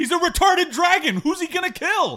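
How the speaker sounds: very high, shrill, loud shouting. In a role-play scene, a character yells back at someone shouting from behind a corner. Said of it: "Samesies as I'm yelling".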